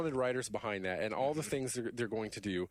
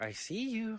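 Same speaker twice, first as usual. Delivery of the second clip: put-on coy childlike voice, higher pitch; 11 semitones higher than usual. Giving examples of game turrets talking: imitating coy childlike turret voice. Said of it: "They have this coy, childlike, you know, voice".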